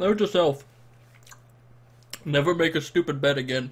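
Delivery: struggling to talk. Eating very spicy food after losing a bet, struggling to talk. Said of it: "It's hard to talk right now".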